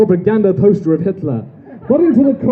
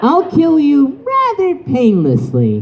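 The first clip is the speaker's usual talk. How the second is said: smug cocky hero voice, high, with big swooping pitch; 5 semitones higher than usual. Reading fanfiction aloud on stage, voicing Goku as he faces Hitler; Goku voice. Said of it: "[name], the Saiyan hero, / [name] said".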